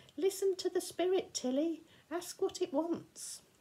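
put-on strange, very high girlish voice. A narrator reads a medium's words to the narrator, in a queer girlish voice. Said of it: "the medium's queer, girlish voice saying".

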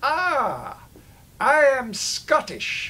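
put-on thick, heavy German accent, very high-pitched. Retelling a woman at a reception who asked about his name, in a heavy German accent. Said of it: "with a very heavy German accent".

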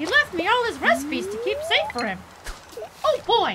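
very high, squeaky cartoon mouse voice, sing-song, bouncing pitch. Reading a game character's dialogue aloud on request: Mickey voice. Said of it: "They wanna hear what Mickey's saying".

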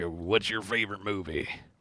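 full-on backwoods hillbilly voice, hushed. Imagining a gunman demanding his favorite movie, in a full Deliverance voice. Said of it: "I went full Deliverance right there".

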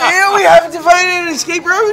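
high, loud, slow calling voice.

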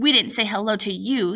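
plain reading voice

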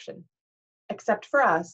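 ordinary delivery, nothing marked

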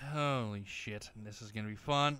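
ironic, low, quiet sarcasm, not meaning it. Playing a game on stream, facing lots of annoying enemies, sarcastic. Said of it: "Though I'm being sarcastic here".

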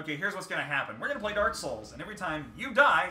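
ordinary talk

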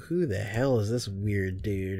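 ordinary talk, nothing marked

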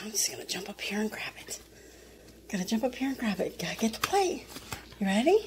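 put-on dog voice. Speaking for the dog after she brings her plate: voicing the dog's thoughts. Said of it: "She says".

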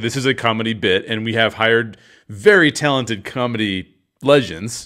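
plain

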